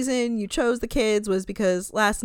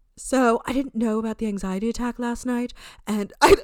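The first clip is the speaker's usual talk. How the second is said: wobbly put-on British accent drifting all over. Retelling what Richard said, imitating Richard's British accent. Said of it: "my British accents are all over the place".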